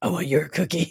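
demented, gravelly monster character voice. Playing a horn dog character, demented Cookie Monster voice. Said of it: "he sounds like a demented cookie monster".

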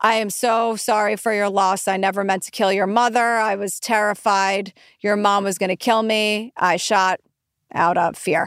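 mechanical, robotic, slow, drawn-out monotone. Mimicking a man reading a handwritten apology note, robotic and slow reading. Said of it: "Very robotically and slowly".

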